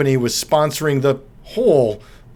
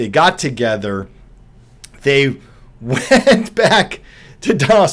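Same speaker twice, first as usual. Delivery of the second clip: speech breaking into laughs throughout. Recounting a witness's court testimony, laughing while talking. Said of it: "Sorry, I'm laughing".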